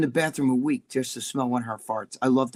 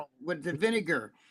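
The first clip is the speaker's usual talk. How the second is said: put-on heavy Bronx accent, said softly; 3 semitones higher, 9 dB quieter than usual. Joining in mocking how Jimmy talks, imitating Jimmy's Brooklyn accent. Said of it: "heavy, like Bronx, Brooklyn accent".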